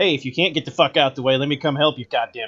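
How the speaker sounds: politely rude tone, Boston style. Comparing drivers, imitating a Bostonian: imitating a politely rude Bostonian. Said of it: "a Bostonian would be like".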